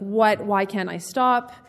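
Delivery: acted-out crying voice. Recalling a phone call to mom about bingeing, acting out crying. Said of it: "on the phone with my mom crying".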